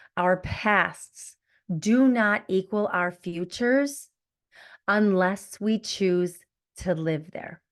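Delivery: slow, deliberate, unhurried delivery, each word set down. Repeating the episode's empower words for listeners: slow, deliberate delivery. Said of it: "say it slowly so it sinks into your beautiful hearts".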